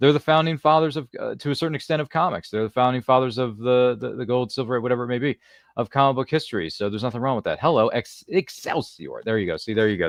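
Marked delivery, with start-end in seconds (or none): 7.6-9.2 weak, poorly done put-on New York accent. Doing a poor Stan Lee impression with a New York accent. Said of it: "my poor attempt at a Stan Lee New York, um, impression".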